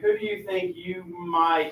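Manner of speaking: plain reading voice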